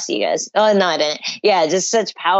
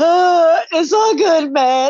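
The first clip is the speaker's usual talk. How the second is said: put-on very high, slow, weepy sob-talk; 11 semitones higher, 4 dB louder than usual. Retelling what a crying fighter told his opponent: imitating someone crying. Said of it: "he's, like, crying, and he goes".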